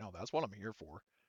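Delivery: no-nonsense, settled, firm, uncheerful tone. Narrating a woman's reply when asked if that's really what she wants, firm tone. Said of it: "firm tone".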